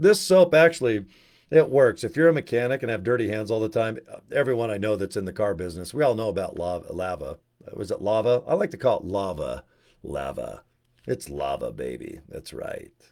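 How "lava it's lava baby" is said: very soft, deep, hushed, drawn-out voice. Speaker says the name of a soap everyone in the car business knows: deepened voice. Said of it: "deepen your voice when you say it".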